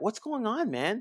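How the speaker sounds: earnest, sincere, concerned voice, very high and slow.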